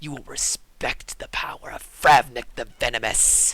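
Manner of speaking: loud, menacing, hissed villain voice. Narrating a foe's gloating words to a player, hissing. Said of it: "As he hisses at you".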